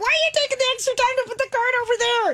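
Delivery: put-on frenzied manic rant, very high and rushed. Acting out what the speaker yelled at a person during a card game, retelling a manic outburst.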